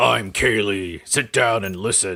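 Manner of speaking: slow, very angry, gruff put-on tone. Teasing the other speaker, doing a mock-angry gruff Kaylee voice. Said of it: "I'm going to make you sound very angry and gruff".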